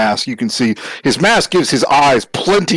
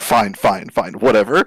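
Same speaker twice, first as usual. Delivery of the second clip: dismissive, brushing-off headmistress voice. Narrating a scene, the speaker voices the headmistress shaking her head: dismissive headmistress voice. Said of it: "the headmistress is like".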